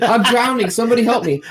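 put-on high scream. Retelling nearly drowning years ago, retelling screaming for help. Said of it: "I start screaming".

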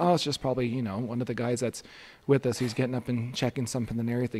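usual speaking voice

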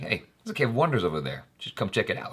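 calm, casual, soft, fast, laid-back.

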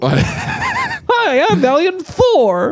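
very high, dumb-sounding, swooping, sing-song cartoon alien voice. Imitating a ventriloquist's puppet introducing itself, in a dumb Valiant Thor voice. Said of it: "he does a dumb voice too".

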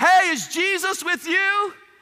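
play-acted, very high, very slow, loud hollering. Acting out Mary calling to Joseph about missing Jesus: shouting as Mary. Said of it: "Mary shouts up to Joseph".

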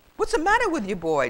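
put-on quick, chiding, grandfatherly old man voice. Old Granddad speaks to Sam Turkey, who wants to lie there, chiding. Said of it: "Chided old Granddad".

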